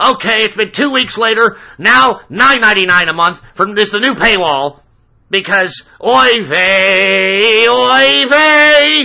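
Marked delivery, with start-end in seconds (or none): 0.0-4.8 disgruntled put-on commentator voice. Mocking Ben Shapiro by imitating his talk: disgruntled Ben Shapiro impression. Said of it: "So he's like".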